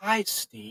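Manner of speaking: hushed, high, soft whisper. Retelling what an entity said into an ear: imitating a whisper. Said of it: "kind of in a whisper".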